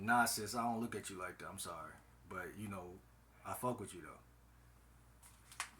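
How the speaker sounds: level, detached, matter-of-fact, flat, slow, unemotional delivery. Showing how to turn down a woman's flirting: unemotional delivery. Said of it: "the key word is unemotional".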